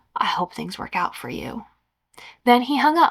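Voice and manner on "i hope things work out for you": hushed, very quiet, breathy, barely-there whisper. Reading a story aloud, a speechless caller finally answering: very quiet voice. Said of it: "he very quietly said".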